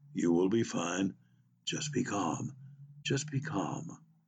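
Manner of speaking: deep, low-pitched, calm voice. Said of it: "The deep voice says".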